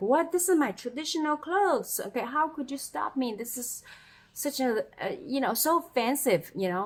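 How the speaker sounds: mock indignant, offended, affronted outburst. Retelling being stopped by a security guard: retelling an offended outburst. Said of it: "I got so offended".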